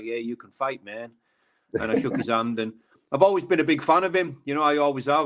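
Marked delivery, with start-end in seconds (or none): 0.0-1.1 put-on American-accented speech. Retelling a handshake and compliment at a press conference: Mike Perry's American accent. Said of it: "in his American accent".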